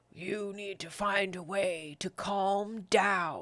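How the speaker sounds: low, slow, gravelly, rasping voice. Narrating a voice heard from a painted circus wagon, in a low gravelly voice. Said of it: "you hear a low, gravelly voice say".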